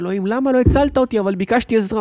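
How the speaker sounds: acted indignant, furious tone, loud and high. Telling a joke where a man storms in to confront God, acting angry. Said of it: "עצבני".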